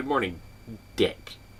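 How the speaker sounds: a held beat of silence before the name. Reenacting a morning greeting to Richard, pause before Dick. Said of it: "I pronounced it just like that. I made there be a pause".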